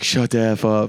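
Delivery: nasty-sounding delivery. Retelling Shane answering the yelling fans: imitating Shane being mean back. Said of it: "being, like, mean back".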